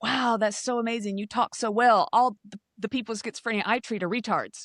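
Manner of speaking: mock self-assured, confident, matter-of-fact tone. Retelling what a psychiatrist said after a presentation: imitating a confident remark. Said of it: "he said it so confidently".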